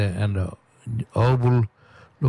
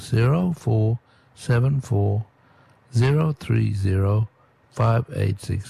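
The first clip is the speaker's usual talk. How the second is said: slow reading pace. Reading out a call-in number to listeners, slowly. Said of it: "I'm going to read it slow".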